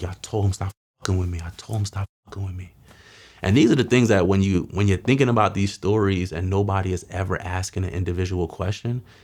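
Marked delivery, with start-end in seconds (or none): 0.0-2.7 put-on sobbing, bawling, words wept out through tears. Retelling getting into a car after the shooting: retelling own crying words. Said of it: "I just start bawling out, crying, like".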